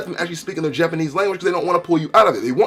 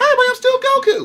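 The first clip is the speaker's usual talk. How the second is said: very high-pitched, cartoonish voice. Showing how he still sounds in his teenage years, do a high-pitched Goku voice. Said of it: "never lost his high-pitched voice".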